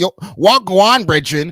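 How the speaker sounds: put-on super overt, high Toronto slang accent. Imitating certain girls who use that accent: imitating an overt Toronto accent. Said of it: "certain girls use that accent".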